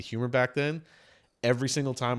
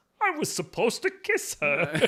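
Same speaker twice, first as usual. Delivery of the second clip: very high, slow, swooping voice; 11 semitones higher than usual. Retelling a movie scene, imitating the actor's weird Kermit-like voice. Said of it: "That's a great impression of that guy".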